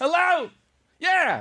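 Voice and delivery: very high-pitched, full-volume shout. Acting out answering the phone in a hypothetical, mock full volume shouting. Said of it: "you say everything in that range".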